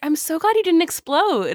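high-pitched, sweetly condescending tone. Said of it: "sweetly condescending".

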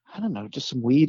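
half-whispered hushed stage whisper under the breath. Retelling how a friend asked the bud tender for weed: imitating a half-whisper. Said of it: "And he whispered it".

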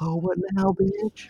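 very high-pitched stage whisper. Retelling a film scene where a character taunts a guard: imitating Chaz whispering.

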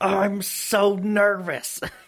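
play-acted, high, angry, pissed-off outburst. Retelling what a young niece said when angry: imitating an angry niece. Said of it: "she was so pissed off one day".

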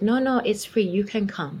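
put-on Chinese accent. Retelling what a woman said on the phone: imitating a Chinese accent. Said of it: "a Chinese woman with a Chinese accent".

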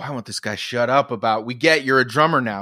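ordinary talk, nothing marked

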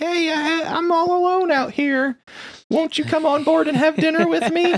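put-on very high-pitched old lady voice. Retelling a friend's game story, a ship called Grandma hails them in an old lady voice. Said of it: "it's like this old lady's voice".

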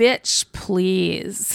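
dismissive, scornful voice. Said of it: "The look on her face is like".

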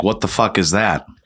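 ordinary talk

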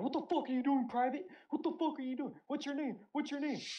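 very high, shrill drill-sergeant shouting. Speaker retells a woman shouting at him as a private: retelling a shout. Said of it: "She's shouting".

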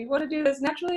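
thrilled, eager, high-pitched and rushed. Retelling a birth story, quoting a nurse's reaction, imitating an excited nurse. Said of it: "So she was super excited".

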